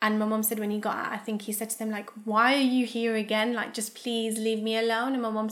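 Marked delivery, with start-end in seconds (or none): 2.2-5.1 acted desperate pleading tone. Retelling what a man said to people at his door, imitating a desperate plea. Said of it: "it was that desperate".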